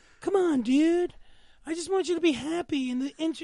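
put-on mellow, laid-back hippie voice. Imitating an anime lover who is a little hippie: imitating a hippie anime fan. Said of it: "kinda, like, hippie a little bit".

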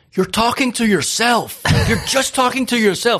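shrill, terrible, very high, loud squeal. Retelling what a friend says each time: terrible impression of Joe. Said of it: "That's a terrible impression of Joe".

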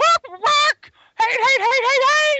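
very high, shrill hen squawk. Mocking jealous critics as squawking voices in chicken land: squawking chicken voice. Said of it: "a bunch of squawking voices out there in fucking chicken land".

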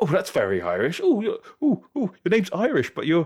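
put-on high, loud, amazed tone, no accent. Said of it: "they lose their mind".

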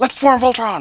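quick, very high-pitched cartoon callout. Comparing show versions, quoting the call to form Voltron: fast-paced Voltron line. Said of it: "more fast-paced, like".

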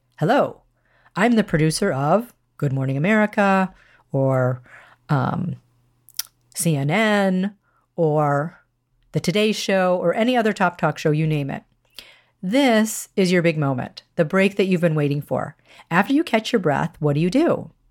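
plain

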